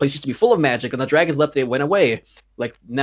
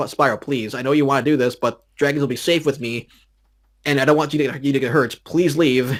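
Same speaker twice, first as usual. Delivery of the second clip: acted, mock begging, pleading tone. Acting out a character's third plea to him, retelling her begging. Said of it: "kind of like begging him".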